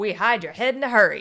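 fast, loud, punchy 1930s-style voice. Quoting a newspaper ad's tagline, done in a 1930s-style voice. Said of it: "It's kind of like that 30s voice".

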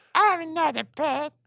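very high, pitched-way-up puppet voice. Speaking for a puppet named Brucio: puppet voice for Brucio. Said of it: "I think that was your voice".

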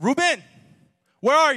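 very high, very loud, shrill demanding voice. The speaker imitates his mom calling him on the phone, interrogator voice. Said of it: "She's either the interrogator".

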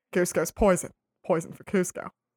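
dopey, dim-sounding cartoon henchman voice. Chatting about watching a movie together, doing a Kronk impression. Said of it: "That was my impression of Kronk".

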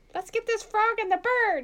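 very high-pitched motherly voice. Quoting a favorite line to the others, in a mom accent. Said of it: "In a mom accent".

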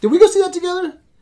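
high-pitched voice. Asking another speaker whether they saw a film together, voice going high. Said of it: "Why did my voice go so high?".

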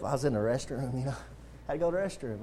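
acted sheepish voice. Retelling how he answered someone asking where he'd been, retelling a sheepish reply. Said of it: "I kind of sheepishly said".

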